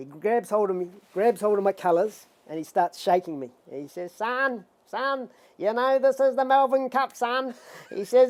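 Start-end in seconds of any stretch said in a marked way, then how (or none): 4.1-7.5 high, pitched-up screeching voice. Recalling Tommy Smith grabbing and shaking him before the Melbourne Cup: high screeching Tommy Smith voice. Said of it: "he's a bit of a high screeching voice".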